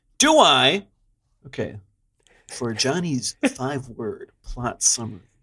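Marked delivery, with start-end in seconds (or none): 2.5-5.2 hushed movie trailer narrator, radio countdown announcer voice. Podcast host introduces a co-host's five-word plot summary; movie trailer narrator voice. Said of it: "I like how when I do this voice".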